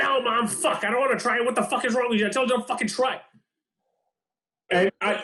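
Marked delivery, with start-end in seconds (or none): 0.0-3.2 put-on pitched-up, angry, bratty kid's outburst. Speaker retells a kid snapping at his pleading mother; imitating Jeremy's angry outburst. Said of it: "And he's like".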